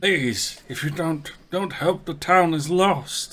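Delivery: slow, high, desperate begging. Narrating a man pleading with a group for help: desperate pleading. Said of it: "desperately pleading to these people".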